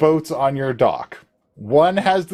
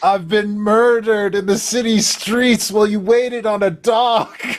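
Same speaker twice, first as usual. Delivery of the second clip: put-on whiny voice, pitched higher; 7 semitones higher than usual. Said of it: "Pinn's much more whiny than that".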